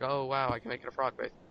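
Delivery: ordinary delivery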